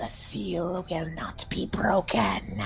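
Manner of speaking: haunting, abyssal, hoarse, hushed demonic whisper. Describing what you hear it whisper: hoarse, demonic whisper. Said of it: "you hear it whisper in like this haunting, horrible, hoarse, uh, demonic, abyssal uh, whisper".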